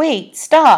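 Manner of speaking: high, imploring tone. Olive calls after Horatio as he turns away, begging him to stop. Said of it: "begged Olive".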